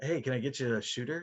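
put-on customer service voice. Joking with friends, the speaker demonstrates a customer service voice. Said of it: "We've all got that customer service voice".

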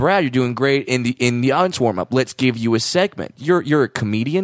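ordinary delivery

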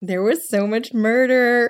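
overly delighted. Remarking on the murders in a story: way too gleeful. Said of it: "I sounded way too gleeful there".

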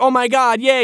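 very high, lukewarm, half-hearted excitement. Retelling a mother's reaction to her son's promotion: imitating half-hearted excitement. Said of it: "excited, but, like, she's not, like, mom excited".

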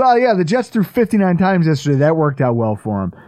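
dry, mocking, poking-fun sarcasm. Quoting a clip of a joke about the Jets' game, retelling a sarcastic jab. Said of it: "sarcastically just poking fun at the Jets".

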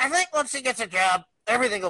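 put-on high-pitched cartoonish teenager voice. Describing a pause in the action they are watching, act out the comment in a Beavis voice. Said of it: "you just hear Beavis's voice go".

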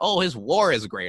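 normal talking voice

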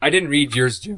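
cracking, breaking voice. Speaker talks to Jim in a group conversation, voice cracking. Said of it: "my voice cracked".

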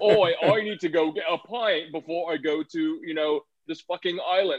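clumsy, overdone, high fake British accent. Mocking how a comic character's dialogue sounded: bad fake british accent.

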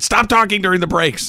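firm, high, bossy, commanding tone. Retelling being told to stop talking during breaks: imitating Amanda. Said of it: "the impression of her that you just did".

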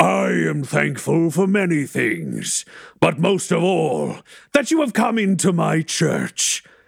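disembodied, high, ringing, echoing voice. Narrating a scene, a voice speaks to the group in a church: echoing voice through a church. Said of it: "a voice echoes out through the church and says".

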